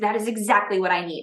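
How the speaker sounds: plain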